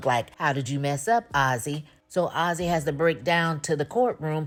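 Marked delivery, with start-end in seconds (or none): none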